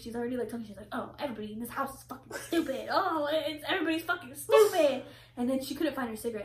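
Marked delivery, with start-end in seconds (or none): 0.9-5.0 put-on play-acted bad-tempered grandmother griping, pitch climbing. Retelling a grandma's bad-mood rant: imitating a grumpy grandma. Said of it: "already in a bad mood".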